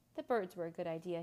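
plain

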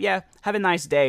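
curt, snippy, snide brush-off with attitude. Retelling a lady's parting reply after refusing to donate: imitating a snippy attitude. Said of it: "she kinda said it with an attitude".

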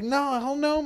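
high squeal.

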